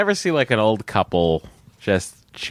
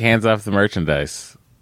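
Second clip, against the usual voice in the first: ordinary delivery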